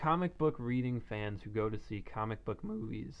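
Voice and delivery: voice breaks and cracks on "movies". Giving his opinion, voice cracking. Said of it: "my voice cracked".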